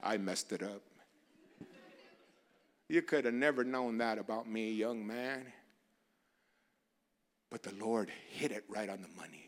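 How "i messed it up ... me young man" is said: slow, drawn-out Southern Louisiana drawl. Retelling what a man said to him during a hug, in a Louisiana drawl. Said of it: "with that Louisiana drawl that he had".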